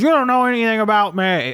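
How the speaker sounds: put-on mean old man voice. Retelling the old neighbor's scared reply: imitating Krunkleberg's mean old voice. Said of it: "Krunkleberg is a mean old guy, so he sounds like that".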